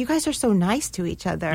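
ordinary talk

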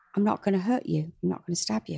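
ordinary delivery

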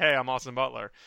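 flat, low, soft. Retelling how Austin Butler introduced himself years ago, plain. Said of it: "He was like".

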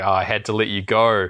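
normal talking voice

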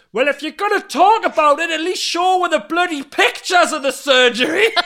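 put-on, very high-pitched, shrill shouting. Retelling how the listener shouted at the telly, imitating you shouting at the telly. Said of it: "you started shouting at the telly going".

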